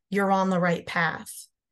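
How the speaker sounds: put-on mumble under the breath. Retelling what a passing hiker said: imitating a mumble under the breath. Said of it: "he mumbled under his breath".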